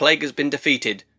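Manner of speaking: normal talking voice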